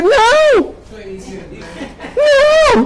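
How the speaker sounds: very high, swooping, stressed "no". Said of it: "That voice got higher".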